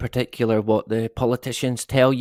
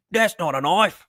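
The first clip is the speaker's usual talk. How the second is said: put-on Australian accent, pitched a bit high; 6 semitones higher than usual. Speaker tries out an accent for someone in Australia: Crocodile Dundee Aussie accent. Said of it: "that's the best I can do".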